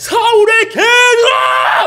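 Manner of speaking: roaring giant voice, very high, loud and slow.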